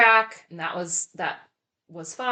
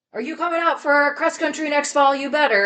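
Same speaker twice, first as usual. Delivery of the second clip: yelling, pitched up high; 9 semitones higher, 5 dB louder than usual. Recalling a cross-country meet, the speaker imitates Coach Schmaltz yelling at them. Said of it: "like yelled at me and was like".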